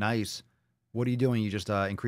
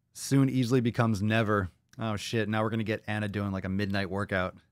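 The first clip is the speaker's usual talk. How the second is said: ordinary talk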